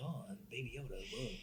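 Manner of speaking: put-on actor voice, hushed, very quiet, slow, stretched out. Imagining a scene where Luke calls out to Baby Yoda: Mark Hamill voice. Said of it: "Mark Hamill being like".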